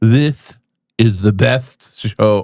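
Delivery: slow, drawn-out politician-style voice. Trying out an impression for the co-host: Donald Trump impression. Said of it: "There's Trump".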